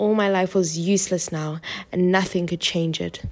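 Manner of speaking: plain reading voice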